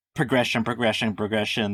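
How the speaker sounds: ordinary talk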